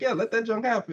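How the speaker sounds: ordinary delivery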